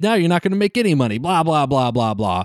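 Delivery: mock scornful, jeering, dismissive taunt. Retelling a scene where Spike taunts the Mario Brothers: imitating Spike mocking. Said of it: "making fun of the Mario Brothers and being like".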